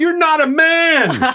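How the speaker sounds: acted-out scream. Retelling what they yelled at the TV during a movie: retelling screaming at the TV. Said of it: "I was just screaming at the T V".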